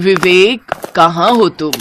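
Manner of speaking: ordinary talk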